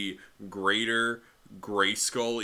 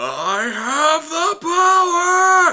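very loud, very high, slow swooping building shout; 14 dB louder than usual. Complaining that he says the line too blandly, a speaker demonstrates a loud shouted build-up. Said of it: "I'm sorry, headphone users".

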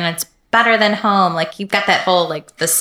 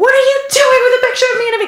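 mock angry yell, higher; 4 dB louder than usual. Retelling a moment at the U S embassy: imitating own past yelling. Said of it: "so I'm yelling at the guy".

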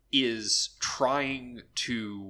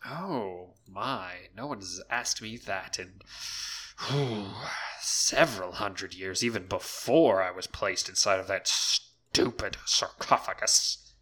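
sarcastic talking stone voice, lower; 4 semitones lower than usual. Voicing a powerful magic stone that speaks to the heroes: snarky magic stone voice. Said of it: "on the snark there, Mister Mana Stone".

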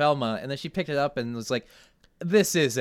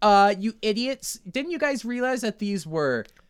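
acted condescending, superior, scolding tone; 7 semitones higher than usual. Describing an episode's ending, imitating Velma's condescending scolding. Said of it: "she's like".

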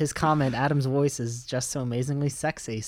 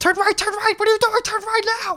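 put-on navigation-device voice, much higher; 6 dB louder than usual. Joking about GPS voices you would like, give driving directions in a George Costanza voice. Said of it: "I'd like a George Costanza one".

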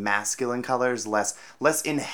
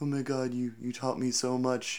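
mock crying, quieter; 2 semitones higher, 5 dB quieter than usual. Retelling a scene where the teacher thanks her, imitating someone crying. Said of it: "he has this whole crying".

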